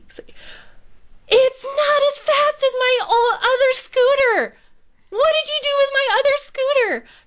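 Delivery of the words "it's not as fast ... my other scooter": put-on very high yell in a kid's voice. Retelling how a son reacted to a new scooter: imitating son yelling. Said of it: "he yells at me".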